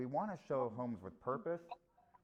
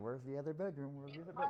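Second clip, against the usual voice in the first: acted-out frightened, alarmed, searching tone; 2 semitones higher than usual. Retelling walking into a house missing a bedroom: imitating own scared voice.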